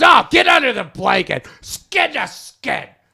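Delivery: put-on aggressive tone. Retelling what she said to him from under the blanket: imitating an aggressive demand. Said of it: "she said it very aggressively like that".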